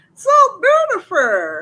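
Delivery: loud, high, swooping, sing-song put-on voice, belted out. Reacting to kind comments, repeating a phrase in Madea voice. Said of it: "In Medea's voice".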